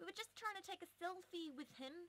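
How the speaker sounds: clumsy put-on New Zealand accent, very high. Quoting people who wanted a selfie with a cab driver, bad New Zealand accent. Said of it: "That was a really bad New Zealander accent".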